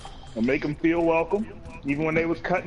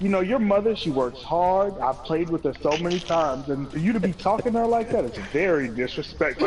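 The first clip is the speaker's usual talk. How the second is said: usual speaking voice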